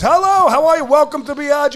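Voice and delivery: high, projecting yell across a distance. Showing how a greeting is called across a restaurant: imitating own yelled greeting. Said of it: "I'll yell from halfway across the restaurant".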